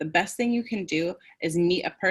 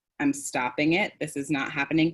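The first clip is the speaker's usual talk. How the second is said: usual speaking voice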